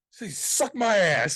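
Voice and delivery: very slow, stretched-out, loud high yell. Retelling getting yelled at for shouting in a public place, re-enacting own loud yell. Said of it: "I got yelled at Friday for yelling that out".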